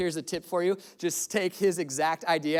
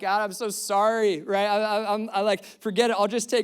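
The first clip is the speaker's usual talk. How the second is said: put-on breaking down in tears, stammering and stumbling; 4 semitones higher, 4 dB louder than usual. Retelling a moment in H-E-B when he broke down, retelling breaking down crying. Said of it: "I'm like breaking down in H E B".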